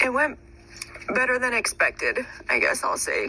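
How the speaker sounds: speaking through tears with crying and swooping pitch. Recording a message about a conversation with Dad, crying. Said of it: "God, I'm crying".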